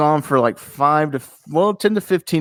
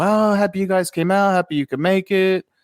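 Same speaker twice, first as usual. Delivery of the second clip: high, real cool, easygoing voice. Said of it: "just real cool, shooting the breeze".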